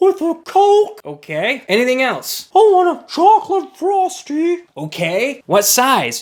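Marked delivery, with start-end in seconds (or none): 2.5-4.6 put-on very high-pitched, bossy chubby little-boy voice. Speaker acting out a kid ordering food, prepubescent fat kid voice. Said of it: "They always sound like this".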